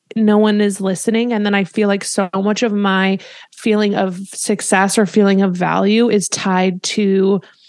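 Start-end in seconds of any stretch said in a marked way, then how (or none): none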